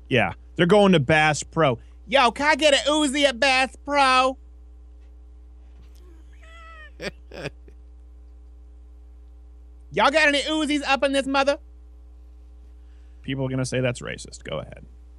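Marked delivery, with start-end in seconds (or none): 2.1-11.6 very high, squeaky, silly comic character voice. Doing a funny put-on voice the speaker has used for years, funny put-on voice. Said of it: "It's a funny voice".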